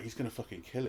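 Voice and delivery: very quiet hushed whisper. Retelling a remark whispered during a tense film scene: imitating a whisper. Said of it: "Jen sort of whispered to me".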